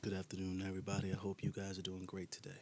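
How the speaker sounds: deep, low-pitched voice. A guest introduces himself to the audience on a show; deep voice. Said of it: "Not you about to use this deep ass voice".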